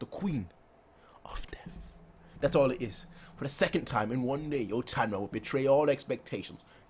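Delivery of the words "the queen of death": hushed, reverent, overwhelmed whisper. Reading a chapter aloud, whispering a dreaded title: whispering. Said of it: "so I have to whisper it".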